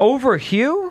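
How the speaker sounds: high, caught off guard, taken aback. Discussing the poll results with the others, reacting to who's winning: surprised. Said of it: "The fact you sound so surprised".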